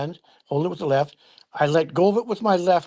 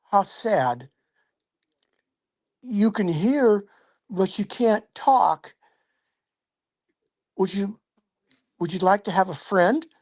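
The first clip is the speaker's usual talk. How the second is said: put-on kindly, gentle, friendly six-year-old's voice; 3 semitones higher than usual. Retelling what he said at six years old, in a soft, friendly voice. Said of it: "in a soft, friendly voice, like a six year old would talk".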